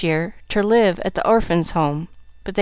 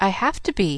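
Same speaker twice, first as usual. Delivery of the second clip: calm voice; 4 dB quieter than usual. Pollyanna answers the boy who complains about her questions, calm retort. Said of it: "retorted Pollyanna calmly".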